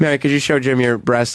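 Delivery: ordinary talk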